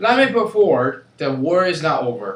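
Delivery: booming, loud, typical American accent. Trying the same sentence in different accents, doing a typical American accent. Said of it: "like typical American accent".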